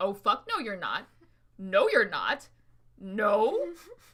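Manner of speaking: play-acted, blunt and point-blank, slow and swooping. Retelling her own reaction to students touching photographs: retelling own past refusal. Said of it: "And I'm like".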